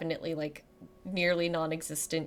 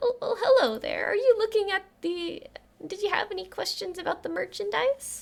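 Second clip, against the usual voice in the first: very high little chirpy voice; 3 dB louder than usual. Voicing a shopkeeper greeting customers from behind: chirpy voice. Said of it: "a new voice that sort of chirps up".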